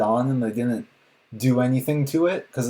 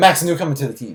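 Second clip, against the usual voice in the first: very fast, loud, crammed-together rushed rattle; 3 semitones higher, 5 dB louder than usual. Mocking how quickly someone introduced a newcomer to the team: said very fast. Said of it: "He said that so fast".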